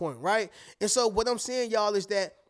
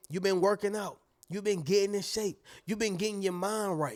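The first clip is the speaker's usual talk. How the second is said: ordinary talk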